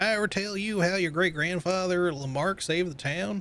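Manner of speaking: fake southern American accent. Reading letters aloud, voicing their writer in a southern voice. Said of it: "I got to do this in like a southern voice".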